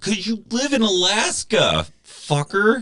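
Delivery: high, mocking, snapped-back delivery. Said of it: "And it's like".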